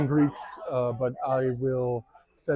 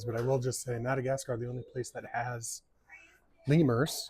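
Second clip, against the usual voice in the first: soft, hushed, respectful half-whisper; 6 dB quieter than usual. Talking about madagascar, half-whispering out of respect for the animals. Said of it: "I'm whispering out of respect for the animals".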